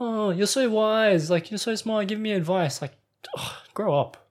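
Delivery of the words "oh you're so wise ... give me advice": put-on, high, gushing, fawning suck-up tone. Retelling how a contestant flattered another for advice: imitating a fawning plea. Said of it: "she was like".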